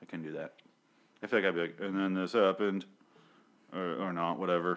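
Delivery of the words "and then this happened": loud, flat, dead-level monotone reading. Imagining reading a dramatic script aloud yourself: mock monotone reading. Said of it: "it's very monotone".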